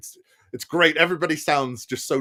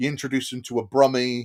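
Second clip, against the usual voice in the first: usual speaking voice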